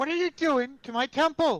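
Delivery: angry shouting in character. Playing a character confronting another over a temple: yelling in character. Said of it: "why are y'all fucking yelling at each other".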